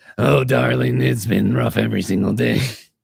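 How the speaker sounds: creaky-voiced cartoon mother voice. Retelling meeting someone in the kitchen, quoting her: Marge Simpson voice. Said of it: "You seriously met Marge Simpson in the flesh?".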